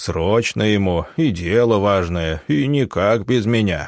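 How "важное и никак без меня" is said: ordinary delivery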